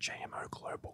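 hushed, breathy whisper, barely audible. Answering a question about the company's name: whispering. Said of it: "Can I whisper it?".

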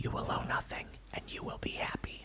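whispered creepily, very quiet. Reading chat comments aloud, then doing a Biden impersonation. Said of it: "That was my Biden impersonation".

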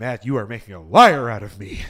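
very loud, booming, deep film voice. Doing a quick impression of a movie star: Harrison Ford impression. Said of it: "That's my Harrison Ford".

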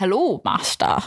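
put-on wise old creature character voice. Pitching the voice they would do for a pangolin, old wise pangolin voice. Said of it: "Are you a pangolin?".

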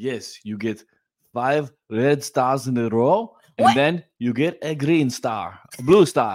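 put-on Israeli-accented speech. Describing the kids' therapy videos, doing Dr. Segi's Israeli accent. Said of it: "A good Israeli accent".

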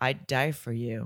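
mock deadpan flat delivery. Recounting how a mother answers her daughter, imitating a dead-eyed flat delivery. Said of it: "she says it all dead-eyed".

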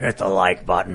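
very deep, low demonic voice. Retelling a scary dream where Ian kept saying it, imitating Ian's demonic voice. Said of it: "Trying to imitate Ian being a demon".

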